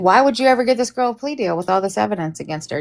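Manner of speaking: ordinary talk, nothing marked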